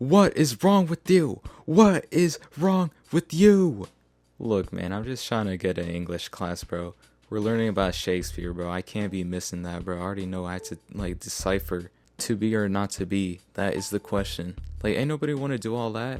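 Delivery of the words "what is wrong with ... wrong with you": put-on screaming voice. Retelling how the security guard screamed in their face: imitating someone screaming. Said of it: "screaming in my face".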